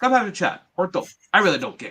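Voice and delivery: put-on French-Canadian accent. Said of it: "French-Canadian accent here ready, uh, for Kevin Owens".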